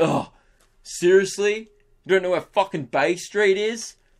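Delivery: belittling, scornful, rude, incredulous disbelief. Imagining answering a stranger's question rudely: imitating a rude reply. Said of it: "That would have been rude".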